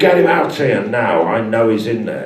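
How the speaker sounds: bad, unconvincing Cockney accent.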